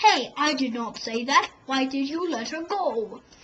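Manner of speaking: storybook pirate captain voice, bellowing. Retelling the Peter Pan story, someone pretends to speak in Captain Hook's voice. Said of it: "in Captain Hook's voice".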